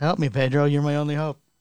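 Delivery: pleading, begging voice. Repeating the Leia plea with Pedro's name: Princess Leia voice. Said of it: "you sound like Leia from".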